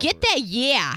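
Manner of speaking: put-on New York accent edging toward Jersey. Asked to say a line the way a man said it, in a new york accent. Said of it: "can you say that in the New York accent?".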